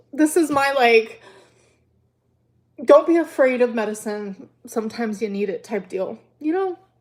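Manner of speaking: talking through happy tears. Giving viewers an update about loneliness and medicine, while crying happy tears. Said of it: "I'm crying actually happy tears".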